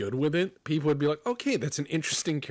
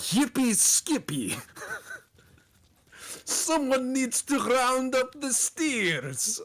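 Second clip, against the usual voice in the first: very high, thick Russian cowboy voice; 11 semitones higher than usual. Voicing a cowboy character who says Comrade Cowboy: heavy Russian accent. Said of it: "comes out with a heavy Russian accent".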